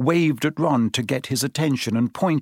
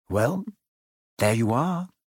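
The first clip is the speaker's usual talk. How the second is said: softly, quietly; 2 semitones lower, 4 dB quieter than usual. Narrator reading Harry speaking to the other two at the ajar door, said quietly. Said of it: "Harry said quietly".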